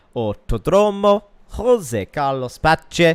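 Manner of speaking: put-on Italian accent, slow and drawn out. Racing commentary naming a brazilian track, in an italian accent. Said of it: "That was an Italian accent for a Brazilian track".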